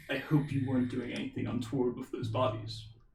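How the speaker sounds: low, very hushed voice. Narrating a game scene as Azriel squeezes the player's hand, in a lower tone. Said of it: "Azriel speaks in a lower tone".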